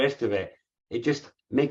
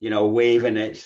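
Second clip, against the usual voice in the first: ordinary talk, nothing marked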